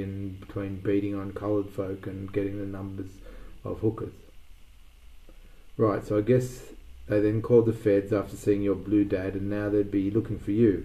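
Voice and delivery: ordinary talk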